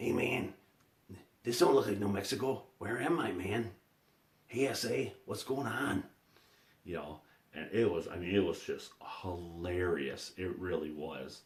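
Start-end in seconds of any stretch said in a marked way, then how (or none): 0.0-6.0 funny puppet voice, pitched much higher. Retelling a puppeteer doing the puppet's lines: Cheech voice. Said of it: "he's doing this voice of Cheech".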